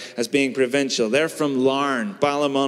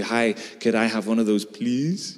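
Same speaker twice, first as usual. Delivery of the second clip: English with slight French lilt on rising tones; 3 semitones lower than usual. Showing how english speakers talk in shops abroad, little french tone on uplifts. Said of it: "your little French tone on the uplifts".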